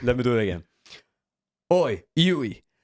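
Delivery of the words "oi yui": pitched-up calling out, the oi called high. Showing how to talk a bit like Butcher, second try, Butcher impression. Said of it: "This is how you talk a bit like Butcher".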